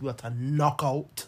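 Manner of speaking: put-on West Indian accent. Signing off for the night to the listeners, put-on West Indian voice. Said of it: "I'm going to say to my West Indian voice".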